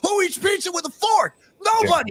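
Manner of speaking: mock, shrill, very high shouted outburst. Retelling two people in a clip yelling about pizza: imitating someone yelling. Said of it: "they both started yelling".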